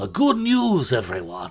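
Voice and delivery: wide pitch swings in announcing style. Speaker tries his one known line, in Professor Farnsworth voice. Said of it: "I didn't do that in my Professor Farnsworth voice".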